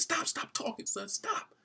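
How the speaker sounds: mock weeping, slow, tearful, pleading, words drawn out. Retelling a father, crying, telling his son to stop: acting out a crying father. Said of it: "'Cause the father's crying too".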